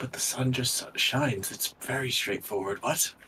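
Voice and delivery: muttering under breath. Voicing a character who nods in acceptance, then speaks under his breath. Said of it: "but under his breath, he's like".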